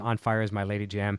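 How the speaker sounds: normal talking voice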